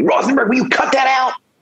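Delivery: yell, pitched very high. Retelling a friend calling out across a snowy parking lot: imitating a friend yelling. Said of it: "a friend starts yelling at me".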